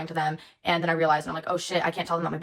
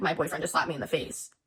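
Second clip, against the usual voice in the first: put-on words pushed out through sobs; 4 dB quieter than usual. Retelling an Uber incident, the speaker quotes their own words to people who approached, retelling sobbing speech. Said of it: "And I'm just sobbing".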